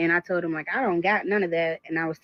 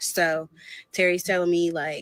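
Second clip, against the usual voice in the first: ordinary talk, nothing marked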